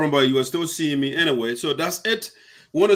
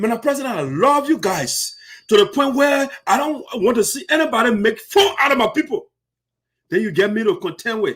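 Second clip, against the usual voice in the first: angry, raised and pitched-up elevated voice; 5 semitones higher than usual. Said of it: "I'm sorry that I have to elevate my voice".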